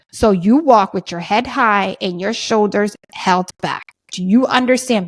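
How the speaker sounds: very slow, earnest, reassuring, each word given weight.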